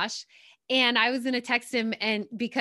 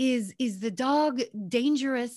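put-on slow, unhurried Russian-accented English. Retelling a man's question about the speaker's Yorkie, in his Russian accent. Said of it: "he said in his Russian accent".

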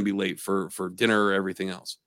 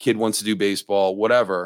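plain

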